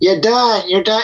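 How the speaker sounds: slightly nasal put-on voice. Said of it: "it's just kind of like a little bit nasal voice".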